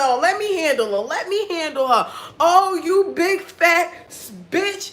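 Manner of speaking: heated, angry cursing, high-pitched. Retelling parents passing the phone to curse a lady out: imitating parents cursing someone out. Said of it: "My mother cursed that lady out".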